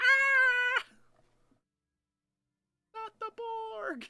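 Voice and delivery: high, slow, panicked wail. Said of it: "are immediately like".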